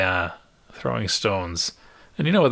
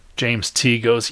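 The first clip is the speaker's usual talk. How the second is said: ordinary talk, nothing marked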